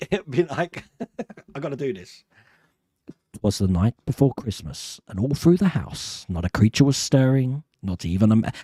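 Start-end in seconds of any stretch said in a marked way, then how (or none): 3.3-8.3 put-on radio voice, narrator-style delivery. Showing how reading an audiobook would sound, in a radio voice. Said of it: "it's like a radio voice, isn't it?".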